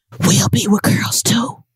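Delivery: soft, hushed whisper, barely voiced. Doing a bit for the audience, a Joe Biden whisper impression. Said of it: "You know how Joe Biden be whispering".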